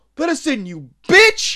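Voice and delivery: loud, high yell at full force. Speaker retelling a scene where one attacker tries to get into the farmhouse, retelling a yell. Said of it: "are yelling bitch and fuck you".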